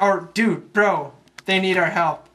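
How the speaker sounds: normal talking voice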